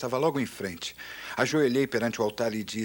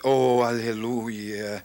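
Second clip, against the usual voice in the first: put-on trembling, quavering, reverent solemn voice; 4 dB louder than usual. Retelling a prayer for healing, the speaker adds a hallelujah in a put-on trembling pious voice. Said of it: "tremi minha voz para fazê-la soar ungida".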